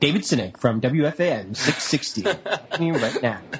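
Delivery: radio station announcer delivery. A podcast guest introducing himself on air, in a radio announcer voice. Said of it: "Should I do my radio voice?".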